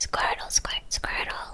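calm, soft whisper, barely audible. Answering a question about a favourite Pokemon, calm Squirtle impression. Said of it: "I'll do my impression of Squirtle, but I'll try and do it calmly".

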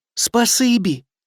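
hushed, barely voiced, soft, slightly high whisper. The acorn thanks the ants who brought back its cap, whispered. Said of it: "прошепотів жолудь".

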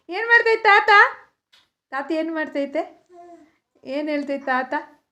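put-on soft cooing baby voice.

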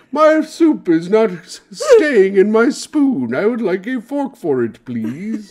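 high, eloquent debutante tone. Acting out a bit, speak like an eloquent debutante out on the town. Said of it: "I speak like an eloquent debutante out on the town".

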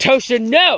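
shrill, high, loud scolding shout. Calling off a dog running toward a scared cat: yelling at the dog. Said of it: "I do have to yell at her".

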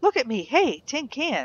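loud outside voice with swooping pitch. In a game, talking to the horse tin can, loud outside voice. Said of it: "with my outside voice".

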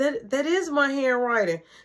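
ordinary delivery

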